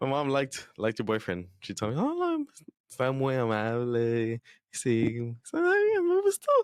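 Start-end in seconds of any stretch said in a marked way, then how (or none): 2.0-6.6 very slow, high, swooping sing-song voice. Repeating their mom's praise of a friend's boyfriend, imitating mom in high voice. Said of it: "voice get so high?".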